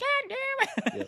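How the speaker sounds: put-on very high, cute, tiny little kid voice. Dad retelling a word his child said, imitating a cute little voice. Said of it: "This little cute little voice".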